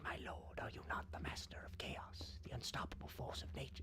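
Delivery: sinister, menacing whispered villain voice. Imagining the line as an evil voice whispering: sinister evil whisper. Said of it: "I just like to imagine that as like the evil whispering".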